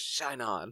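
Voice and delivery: whispered, in character. Voicing a character who whispers as he shoots: whispering in character. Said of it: "he whispers".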